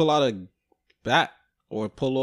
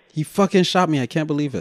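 put-on panicked scream; 3 semitones higher, 6 dB louder than usual. Retelling a story, acting out the husband who starts screaming: imitating someone screaming. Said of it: "He starts screaming".

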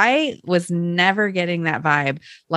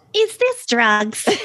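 put-on slight Canadian accent, raised pitch; 6 semitones higher than usual. Recounting a scene, quoting Jocelyn in her little Canadian accent. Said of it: "In her little Canadian accent".

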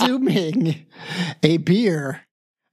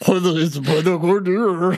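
mocking dumb voice. Imitating the other speaker's line in the dumb voice: imitating a dumb voice. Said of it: "I wanted you to do the dumb voice".

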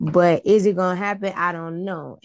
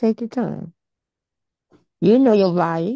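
speaking with mouth full, chewing; 2 semitones higher than usual. Giving advice to a listener, speak with a cookie in your mouth. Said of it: "I had a cookie in my mouth".

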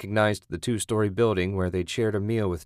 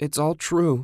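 moaned; 7 semitones higher than usual. A narrator voices a character's line in a story, moaning. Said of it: "Julie moaned".

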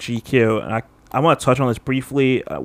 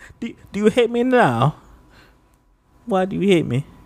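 badly done, high-pitched, put-on British accent; 8 semitones higher than usual. Speaker imagines Tariq turning out to be British: terrible British accent. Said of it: "That's a terrible accent".

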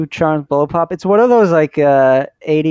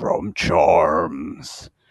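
very deep, soft, breathy, half-whispered baritone; 12 semitones lower, 6 dB quieter than usual. Imitating the man in a commercial as he turns and speaks, in a super deep baritone voice. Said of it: "his super deep baritone voice says".

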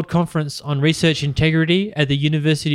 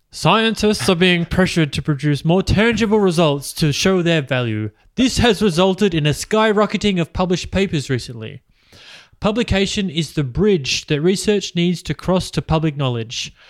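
put-on posh, refined, plummy Melbourne accent. Reading from a speech after being asked for the voice: Alan Finkel impression. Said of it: "can you do a Fi-, Finkel voice?".

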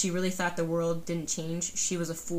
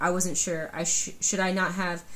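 ordinary talk, nothing marked

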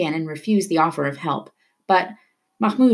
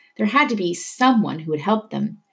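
usual speaking voice

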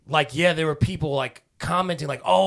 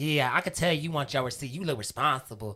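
put-on ratchet girl voice, quieter; 5 dB quieter than usual. Retelling the gas station girl asking about a receipt: Woah Vicky voice. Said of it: "She kinda talked like, uh, you know that, uh, celebrity, like, Whoa, Vicky?".

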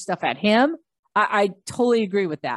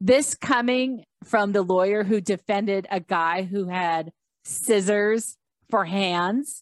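plain

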